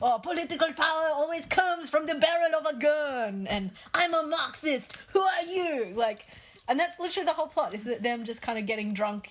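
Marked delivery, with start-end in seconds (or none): 0.0-5.9 put-on French accent, pitched up. Describing a film, act out its random lines as Peter Dinklage doing a French accent. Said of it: "in a French accent".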